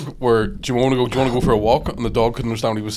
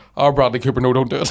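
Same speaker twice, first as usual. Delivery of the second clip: normal talking voice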